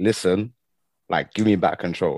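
plain

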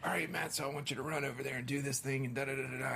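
terrible, fast, gruff put-on voice.

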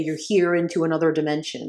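ordinary talk, nothing marked

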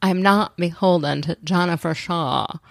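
mumbled put-on voice with half-swallowed words. Quoting Meredith in a mumbled impression: Meredith impression. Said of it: "she can't say it".

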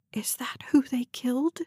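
whispered, barely voiced. Reading fiction, a woman cuts into a man's explanation, whispered. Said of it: "She whispered".

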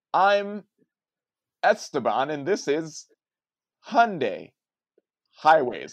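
stiff, slow, loud, robot-like machine delivery. Retelling an overthought line during a shoot: imitating own robotic delivery. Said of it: "You sound like a robot".

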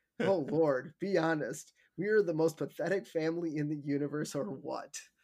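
ordinary delivery

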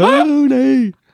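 very high, long drawn-out calling voice. Showing the beast copying the speaker calling a name: manticore imitating the speaker calling. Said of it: "do an impression of me calling you".

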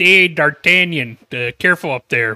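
loud, slow, stupid-sounding cartoon voice, called out. Retelling a line from a cartoon scene in Donnie's stupid voice. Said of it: "Donnie's stupid voice".

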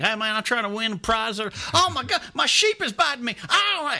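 very high country bumpkin voice. Recalling calling in as made-up callers, in a country bumpkin voice. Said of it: "a character that was like a country bumpkin".

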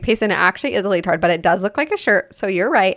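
ordinary delivery

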